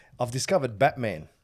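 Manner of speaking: plain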